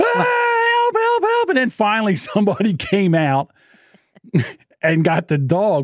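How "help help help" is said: acted, very high, drawn-out screaming and crying. Retelling blocking an attacking dog with a bike, calling for help; reenacting screaming and crying. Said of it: "screaming and crying like a bitch".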